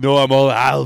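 very loud, high, bad put-on voice. Joking about a gym movie scene: Arnold Schwarzenegger voice. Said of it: "That's my eight o'clock Arnold".

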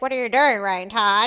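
loud, goofy, made-up silly voice. Retelling how a child made faces in the mirror: imitating a child's silly put-on voice. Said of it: "making voices to match the face".

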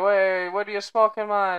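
terrible fake Jamaican accent, loud and slow. Retelling what people asked a man puffing smoke outside the airport, worst Jamaican accent. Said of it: "the worst Jamaican accent I think I've ever heard".

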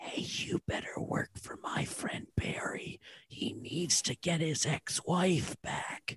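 very quiet, barely audible whisper. Whispering into a piano to make it work for a friend: whispering. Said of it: "whisper inside of it like this".

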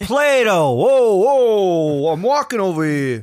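put-on broad, thick New York accent, drawn-out "whoa". Playing an ancient greek, thick new york accent. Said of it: "the ancient Greeks did talk with thick New York accents".

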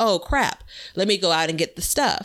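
ordinary delivery

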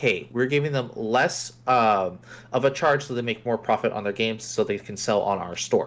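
ordinary talk, nothing marked

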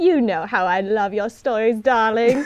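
loud, grand, affected fancy-widow voice. Teasing his podcast guest, the host repeats her words in a fancy widow voice. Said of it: "you sound like a fancy widow".

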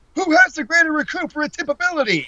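exaggerated, over-the-top delivery. Imitating how a wrestling commentator says a line, over-the-top delivery. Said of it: "He's that over the top".

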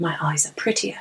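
put-on slight English accent. Quoting a favorite film line the way the actor says it: Jude Law's English accent. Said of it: "the way he says it with his English accent".

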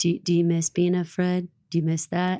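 creepy, eerie delivery. Retelling a line from the show: imitating Lawrence. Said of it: "that line that he says where he's like".

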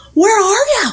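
acted screaming. Retelling how people in the driveway call out: imitating people screaming. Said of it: "they'll start screaming".

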